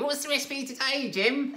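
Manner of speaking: tiny, very high piping voice. Retelling a radio show's daily recipe spot, imitating a little voice. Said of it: "this little voice would say".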